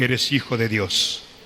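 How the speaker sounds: grave, very low, serious prophetic tone. The speaker shows the audience how to say it; deep serious voice. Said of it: "Hasta la voz así gruesa".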